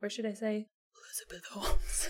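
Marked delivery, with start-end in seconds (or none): 1.0-2.1 put-on voice, deep and breathy. A podcast host, introducing this week's book, says the founder's name in a Bane-like deep voice. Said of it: "I sound like Bane".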